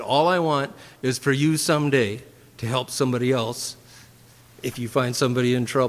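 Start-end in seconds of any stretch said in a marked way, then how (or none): none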